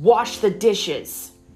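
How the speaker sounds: loud, roared, bellowing voice. A man who dragged a woman across the floor orders her again; bellowing. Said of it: "once again bellowed".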